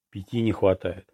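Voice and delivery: ordinary talk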